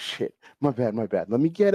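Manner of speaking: put-on drunk man giggling. Retelling a man slipping off a stool: imitating a drunk man giggling. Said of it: "slipping off the stool and, like, giggling".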